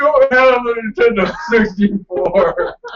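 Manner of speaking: high, slow, dismayed wail of disappointment. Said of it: "I woke up and like".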